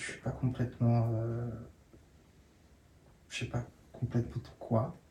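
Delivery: trembling voice. Speaking to an audience and close to tears, the speaker talks in a trembling voice. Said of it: "je sens que j'ai la voix qui tremble".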